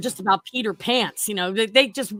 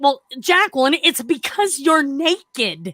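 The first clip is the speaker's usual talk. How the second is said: put-on exasperated voice, higher; 4 semitones higher, 4 dB louder than usual. Retelling what the trading desk contact said on the phone: imitating an exasperated reply. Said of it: "really exasperated, as if I should know this".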